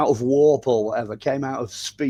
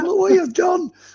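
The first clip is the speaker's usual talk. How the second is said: furious alien scientist voice, higher and louder; 5 dB louder than usual. Imagining what an alien scientist would say after a crash: angry alien scientist voice. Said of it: "a very angry alien scientist going".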